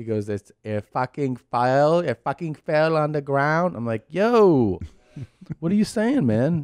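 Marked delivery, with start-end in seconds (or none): 0.3-3.8 mock toddler baby talk, higher, slower. Retelling what the two-year-old little one says, imitating toddler baby talk. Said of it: "he has like kind of baby talk thing".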